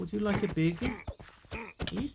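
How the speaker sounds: New Zealand accent, casual. Showing how a talking duck would sound: Kiwi accent. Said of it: "With a Kiwi accent".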